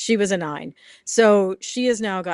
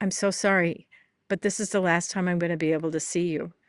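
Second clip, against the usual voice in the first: imitated whisper; 4 dB quieter than usual. Retelling how a veterinarian whispered goodbye into a dog's ear: retelling a whisper. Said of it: "he would whisper in their ear".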